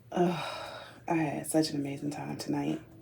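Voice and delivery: sleepy, very quiet, flat, worn-out voice. Speaking at two thirty in the morning after an amazing evening: tired. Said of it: "and I'm tired. I can't even talk".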